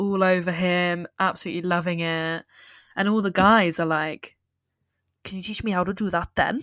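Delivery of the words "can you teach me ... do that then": quick, put-on Welsh accent. Retelling what the guys asked after the dancing, welsh accent. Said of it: "petition for you to have this Welsh accent the entire episode".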